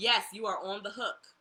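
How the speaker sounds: ordinary talk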